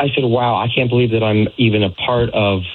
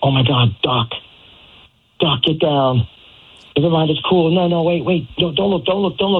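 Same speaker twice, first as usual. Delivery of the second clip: loud, high, drawn-out yell; 6 semitones higher than usual. Retelling what a date yelled out at a restaurant: imitating someone yelling. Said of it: "she literally yells out".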